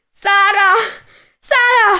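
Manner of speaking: high-pitched loud screaming. A mother screams as a soldier pulls her daughter away from her. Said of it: "Urlò la donna".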